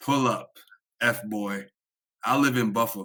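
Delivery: ordinary delivery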